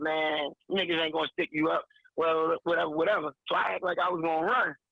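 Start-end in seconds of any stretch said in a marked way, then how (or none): none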